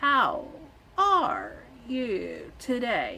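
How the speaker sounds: every word drawn out, very slow. Showing how some characters talked, like Flash on Zootopia: Flash slow-talk imitation. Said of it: "they were talking like this. It's like uh, Flash on Zootopia".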